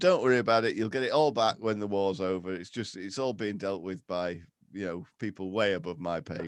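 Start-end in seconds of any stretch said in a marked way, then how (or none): none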